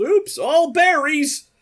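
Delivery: shrill, very high, very loud yell. Imagining Captain Crunch after someone goes down: Captain Crunch yelling. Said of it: "teabags them and yells".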